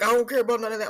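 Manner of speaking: put-on Philly accent, mumbling. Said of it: "mumbling, like, Philly guy somewhere".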